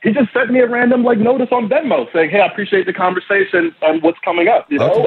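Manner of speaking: anxious, rushed, defensive delivery. Eric answers the others' questions, sounding nervous and defensive. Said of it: "you're sounding a little bit defensive and nervous here".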